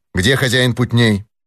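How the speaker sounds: ordinary delivery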